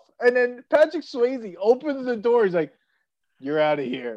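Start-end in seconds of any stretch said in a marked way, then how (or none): 3.4-4.2 calm, unbothered, matter-of-fact tone. Retelling a movie scene where a bouncer gets thrown out: imitating Patrick Swayze, totally unfazed. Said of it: "totally unfazed".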